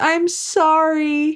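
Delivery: mock crying whisper. Retelling a scene where Entrapta, hands tied, is pulled by her hair: retelling Entrapta's crying whisper. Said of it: "she cries and she whispers".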